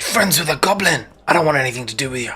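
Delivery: aggressive, hostile, angry delivery. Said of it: "very aggressively addresses you".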